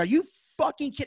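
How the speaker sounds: mock high-pitched, furious outburst, full meltdown. Retelling a supervisor's news at work: retelling an angry outburst. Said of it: "I had the ugliest meltdown in the store".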